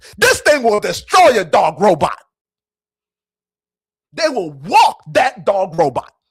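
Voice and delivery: heated, very loud, passionate rant. Addressing the audience as folks, the speaker gets passionate. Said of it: "I'm sorry if I'm being too passionate".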